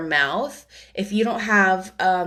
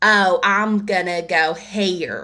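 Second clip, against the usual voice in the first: drawled Southern accent, "here" stretched to two syllables. Showing how a southern voice stretches one-syllable words into two: southern accent, two-syllable here. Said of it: "as one syllable would be two for her".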